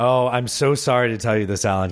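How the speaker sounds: delighted, gleeful, joy barely hidden. Telling alan his guess in the game was wrong; joy in the voice. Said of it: "Can you hear the joy in the voice?".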